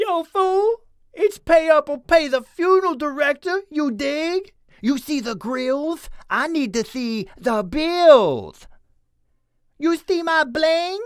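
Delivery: high, goofy voice. Trying out lines for a comic-relief character: high pitchy goofy voice. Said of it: "he kind of has a really high pitchy voice".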